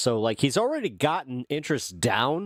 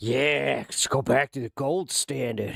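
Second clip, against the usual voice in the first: creepy put-on voice. Joking as a libertarian who wants the gold standard: creepy libertarian voice. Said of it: "my libertarian had, like, a creepy voice".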